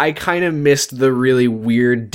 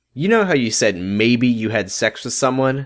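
ordinary talk

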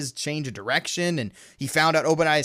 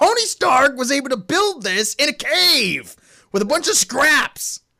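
mock sudden high snap, stretching out the word cave; 10 semitones higher, 4 dB louder than usual. Retelling a favorite movie line where the bad guy snaps: imitating Obadiah Stane snapping. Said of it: "he just snaps and goes".

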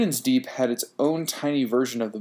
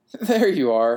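raised voice, half-laughing, on the edge of laughter; 5 dB louder than usual. Narrator reads themself greeting a pair of lit circles in a dark room, almost laughing. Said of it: "I almost laughed".

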